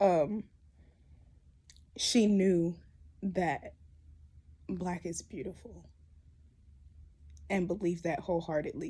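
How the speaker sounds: speaking while crying. Remembering an aunt for a video, talking through tears. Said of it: "we're gonna talk through the tears".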